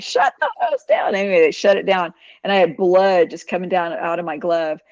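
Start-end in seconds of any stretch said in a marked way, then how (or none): 0.0-1.2 put-on scream, high and urgent. Retelling a night accident rolling up hose, imitating her own scream.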